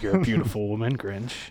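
flirty, fawning, laid-on-thick flirtation. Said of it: "being like".

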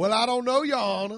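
mock Southern lawyer accent. Riffing about courtrooms, addressing the judge in a Southern lawyer voice. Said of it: "adopt some Southern lawyeralities".

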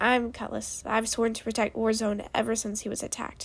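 ordinary delivery

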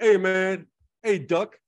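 loud, high, slow, drawn-out shouted delivery. Retelling a comedy routine to another speaker: Pablo Francisco's bouncer impression. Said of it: "he does an impression of the, of the bouncer".

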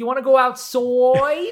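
put-on almost Boston accent. Retelling an odd conversation to others, in an almost-Boston accent. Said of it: "it was like almost Boston".

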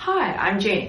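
professional, businesslike voice. Showing how she introduces herself in business settings, professional voice. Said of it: "that's like my my professional voice".

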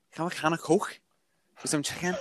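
Liverpool accent. Challenged by another speaker to show an accent: Liverpudlian accent. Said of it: "you mean Liverpudlian accent?".

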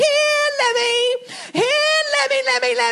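very high, full-lunged, play-acted calling out. Retelling calling her lamb as a little girl, retelling calling at top of lungs. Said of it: "calling at the top of my lungs".

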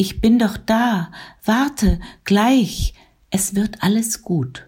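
high, loud, stirred-up, eager calling out, drawn out. Reading a novel, a woman answers a faint whimpering: excited, agitated. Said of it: "Aufgeregt durchbrach ihre Stimme den stillen Morgen".

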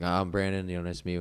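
ordinary delivery

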